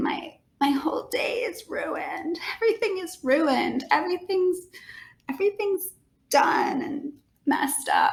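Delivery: high, whispery crying wail.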